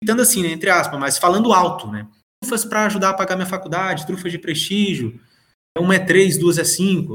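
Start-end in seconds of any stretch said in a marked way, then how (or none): none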